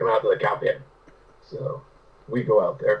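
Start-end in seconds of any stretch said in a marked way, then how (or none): 0.0-0.8 put-on gravelly old man voice, heavy accent, faster. Speaker retells what an old man said to the boys, gravelly, heavily accented. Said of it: "this old man's got this gravelly voice with a heavy accent".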